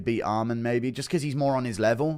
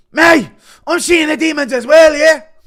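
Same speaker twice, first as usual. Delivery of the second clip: wired, very shrill, loud ranting; 16 dB louder than usual. Asked for Conor doing coke with Bryce Mitchell, do a Conor McGregor on coke impression. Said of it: "Impression of Conor doing coke with Bryce Mitchell".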